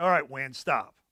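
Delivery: put-on angry tone. Retelling how he got up and ordered the wind to stop, retelling an angry command. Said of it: "He's angry".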